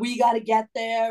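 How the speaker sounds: put-on demanding yell, insistent, pushed out. Retelling angry passengers arguing with the lead flight attendant: imitating someone yelling. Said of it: "yelling at her".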